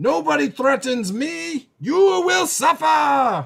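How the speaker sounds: very high, loud shouted yell. A game master voices an enemy yelling back after being hit, yelling back in character. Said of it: "and then he yells back".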